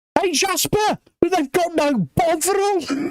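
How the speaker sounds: loud put-on scream. Retelling a comedy sketch where a mate screams in a queue: imitating someone screaming loudly. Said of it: "screamed out at the top of his voice".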